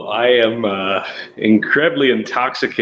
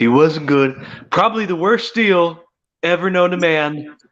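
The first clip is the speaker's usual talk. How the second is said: voice with just a slight hint of nasality; 7 semitones higher than usual. Joining others in a bit about a bad business partner, impression, not quite nasal enough. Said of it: "you need a little more nasal".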